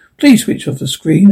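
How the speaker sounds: ordinary delivery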